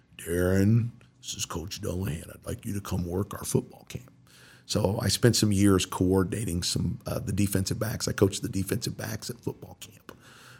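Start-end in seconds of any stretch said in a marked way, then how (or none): 0.2-4.1 rough, coarse, gravelly coach voice. Retelling a phone call from a football coach: imitating a gravelly voice. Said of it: "this gravelly".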